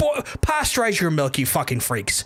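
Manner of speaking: furious angry rant with swooping pitch. Ranting to chat about people drinking raw milk, angry rant.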